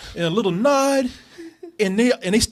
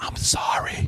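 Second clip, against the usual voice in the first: mock whispering, quieter. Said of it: "she whispered".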